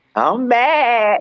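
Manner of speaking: put-on high-pitched girlish voice. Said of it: "I'm going with the girl voice".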